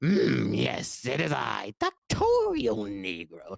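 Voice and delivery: slow, creaky, swooping, dragged-out character voice. Showing the voice made for a lab-coat character: Doctorial Negro voice. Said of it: "I had this voice too".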